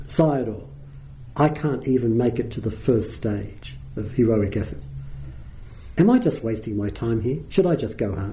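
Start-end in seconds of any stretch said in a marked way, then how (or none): none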